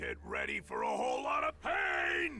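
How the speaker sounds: screaming. Playing along in a game, threatening another character, a screaming threat. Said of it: "Why are you screaming?".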